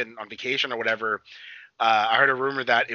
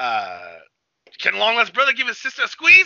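put-on Jersey accent, higher, louder, slower; 10 semitones higher, 6 dB louder than usual. Recapping a show's final scene, quoting Pietro in his super Jersey accent. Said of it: "he has like this super Jersey accent".

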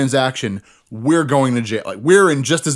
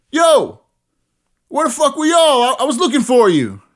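very high-pitched, loud shout; 12 semitones higher, 4 dB louder than usual. Retelling how a man spotted you across the street, imitating someone shouting. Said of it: "shouts to us".

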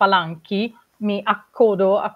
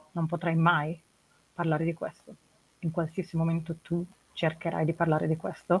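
very quiet, menacing, threatening voice; 3 semitones lower, 10 dB quieter than usual. Playing a role-playing game, speaking to her in Alea's voice, menacing. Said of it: "Mi stai minacciando".

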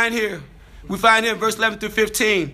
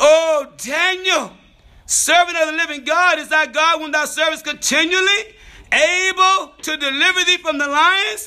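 high, grieving, sorrowful, lamenting crying call; 7 semitones higher than usual. Retelling how a man rose early and called out at the lions' den, acting out a sorrowful cry. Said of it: "crying with a sorrowful voice. Lamentable".

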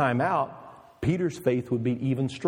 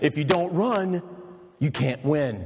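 acted very firm tone; 3 semitones higher than usual. Retelling a woman's answer to a runner who shouted: retelling a very firm reply. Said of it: "she says with a very firm voice".

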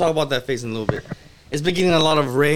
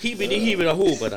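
fake Swedish-sounding gibberish babble. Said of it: "That's Swedish, right?".

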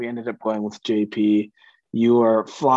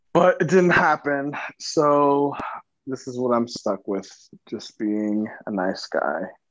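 sad, dejected, defeated resignation with drawn-out "so". Talking about his own situation, sad and defeated. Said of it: "You sound so sad and defeated".

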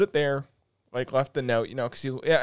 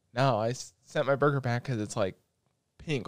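low, hushed stage half-whisper; 5 dB quieter than usual. Retelling a complaint to a server during a movie: imitating own half-whisper. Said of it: "I'm trying to whisper 'cause".

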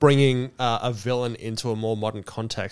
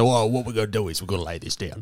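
put-on cockney accent. Retelling how the speaker opened the episode: imitating own cockney voice. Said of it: "I came in like a cockney and said".

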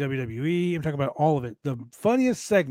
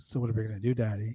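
put-on sexy voice, lower and quieter; 4 semitones lower, 5 dB quieter than usual. Recounting how Max Caster said it: Max Caster's sexy voice. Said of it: "It was funny how he said it".

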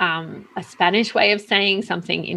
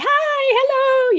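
very high, happy, excited voice; 4 dB louder than usual. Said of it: "really, like, excited".

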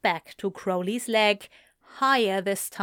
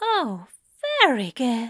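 swooping, admiring, lavishly approving tone; 4 semitones higher than usual. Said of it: "Aziraphale praised".

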